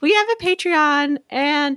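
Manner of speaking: high, slow, silly put-on voice. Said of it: "I don't know why I'm doing that voice".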